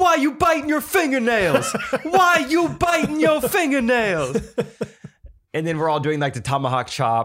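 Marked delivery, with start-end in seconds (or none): 0.0-4.4 mock very high jeering heckler shout. Retelling a fan heckling Isaac at the end of the game, imitating a heckler yelling. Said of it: "he was just like yelling at Isaac".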